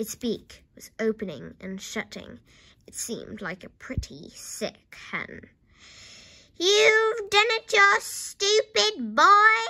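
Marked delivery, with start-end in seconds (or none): 6.6-9.7 put-on very high, shrill, scolding yell, boy drawn out. Grandma shouts at the boy, shouting. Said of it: "Grandma shouted".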